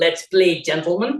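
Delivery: imitated South African accent. Imitating the umpire on the stump mic: South African accent. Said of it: "apologies for my South African accent".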